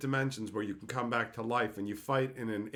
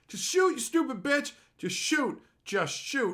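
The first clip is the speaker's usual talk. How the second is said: mock all-out, high, top-of-lungs yelling; 13 semitones higher, 5 dB louder than usual. Retelling shouting at the TV screen during a show: retelling a yell at the screen. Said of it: "I was just yelling at the top of my lungs".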